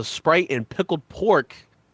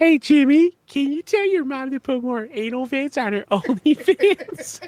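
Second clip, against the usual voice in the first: very high-pitched meme-style voice; 12 semitones higher than usual. Doing the Carl Wheezer meme after the other speaker can't: Carl Wheezer voice. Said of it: "I was gonna do that Carl Weezer meme".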